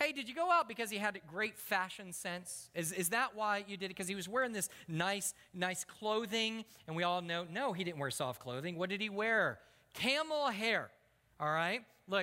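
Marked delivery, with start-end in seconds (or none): none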